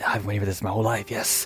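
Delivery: hushed whisper. Voicing a seller who steps back inside his house: whispering. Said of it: "whisper a little bit".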